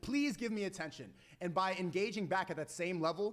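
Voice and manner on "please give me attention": mock pleading, put-on begging. Telling chat how a woman yelling really means, voicing her in mock pleading. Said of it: "she's basically pleading for your attention".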